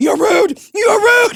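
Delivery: high, loud, angry screaming. Retelling screaming out a car window at two cops: retelling an angry scream. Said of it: "screaming at these two cops".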